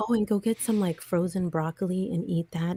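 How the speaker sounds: whispered speech. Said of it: "He was just, like, whispering".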